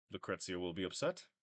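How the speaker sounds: soft, deadpan monotone with no inflection. Narrating a character who looks at the player and speaks, flat monotone. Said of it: "He says, very uh, monotone".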